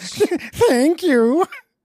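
cheery, high-pitched video game shopkeeper voice. Recalling a game shopkeeper thanking you after a purchase, Symphony of the Night librarian impression. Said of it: "the librarian merchant from Symphony of the Night when you buy stuff and he".

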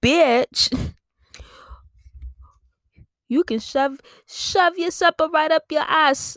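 clumsy put-on Jamaican accent. Speaker retells a wife answering her husband's demand for supper, in a bad Jamaican accent. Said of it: "was that Jamaican?".

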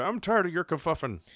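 put-on high old-man yelling holler. Reacting to another speaker's word choice, a mock old-man yell. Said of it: "like a 70-year-old man, like yelling at kids in his yard".

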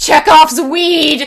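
sudden, loud, high yelled outburst in unison. Retelling how he and a friend yelled in a theater, retelling a loud yell. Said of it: "him and I both at the same time yelled".

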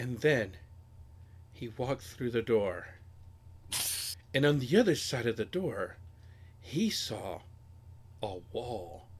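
very slow, drawn-out, dramatic reading aloud. Recalling how he read aloud to listeners, reenacting very slow, dramatic reading. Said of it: "So I would read it like really slow, and dramatic".

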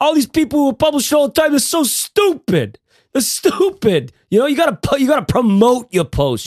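very high, animated, swooping sing-song voice. Retelling what Derek says about publishing: Derek impression. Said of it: "That's my Derek impression".

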